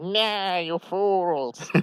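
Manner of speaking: high cartoon villain voice. Telling a story and voicing the screaming character, Skeletor voice. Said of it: "whenever I do his voice, uh, it's like as it's as Skeletor".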